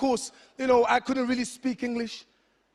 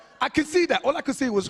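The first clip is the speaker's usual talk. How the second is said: ordinary delivery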